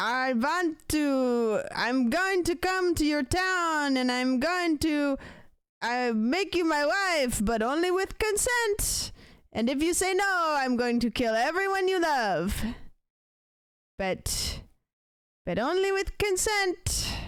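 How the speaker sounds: put-on vampire voice. Acting out what the boyfriend says, in a put-on vampire voice. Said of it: "That's my vampire voice".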